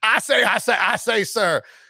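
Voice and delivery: exaggerated southern drawl, high and slow. Doing the Looney Tunes rooster, in a Foghorn Leghorn accent. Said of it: "In a Foghorn Leghorn accent the whole time. It's like".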